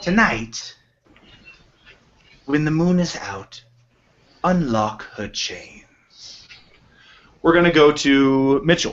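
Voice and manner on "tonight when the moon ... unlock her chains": whispered, higher. Voicing a character who leans close to a player's ear: whispering in someone's ear. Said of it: "leans close to whisper in your ear".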